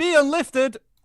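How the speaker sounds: booming, very loud, high, shrill commentator voice. Streamer announces the selected channel name, commentator-style announcement. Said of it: "announce it as if I am a commentator".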